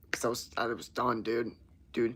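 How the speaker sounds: ordinary talk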